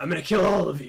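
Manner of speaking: speaking in a put-on vampire voice. Voicing a wounded monster speaking in Slate's voice. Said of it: "he starts speaking in Slate's voice".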